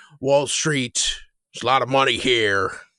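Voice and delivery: fake Southern American accent, laid on. Describing an actor playing a federal agent in Die Hard with a Vengeance: Jeremy Irons fake Southern accent. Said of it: "he does put on that that fake Southern accent".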